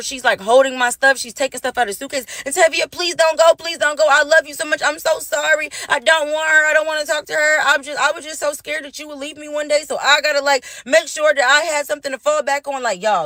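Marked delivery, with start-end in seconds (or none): 2.4-12.8 mock crying, high, tearful and desperate. Retelling what a woman said as the speaker packed up, imitating tearful pleading. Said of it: "The bitch started crying and pleading".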